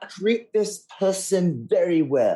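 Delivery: put-on English accent. Imitating restaurant staff spotting a wine snob: bad english accent. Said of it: "they're gonna have a really bad English accent suddenly".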